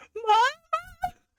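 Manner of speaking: very high, long, drawn-out, stretched cry. Voicing a character watching her mother die: yelling in character. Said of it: "I just yell".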